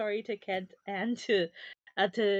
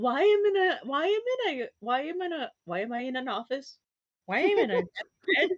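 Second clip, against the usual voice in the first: bewildered bird voice, higher pitch; 5 semitones higher than usual. Voicing a bird that wakes up in a strange bed: confused bird voice. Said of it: "poor bird's gonna wake up and be so confused".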